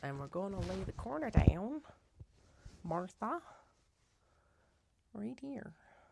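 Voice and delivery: high-pitched cartoon frog puppet voice. Laying down a fabric corner while talking: Kermit voice. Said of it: "that was in a Kermit voice".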